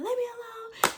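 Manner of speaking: shrill, very high screaming yell. Retelling yelling at mom during labor: retelling a yell. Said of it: "I'm screaming, I'm yelling at her".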